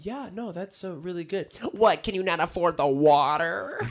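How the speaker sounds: bitchy, whiny voice. Retelling a rude woman at a restaurant, imitating a whiny voice. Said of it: "her bitchy voice was whiny".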